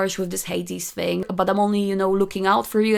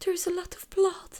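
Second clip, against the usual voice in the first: put-on crying voice, higher, quieter; 11 semitones higher, 8 dB quieter than usual. Retelling a comic scene where Persephone cuts her hand: imitating Persephone crying. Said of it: "crying and sparkling".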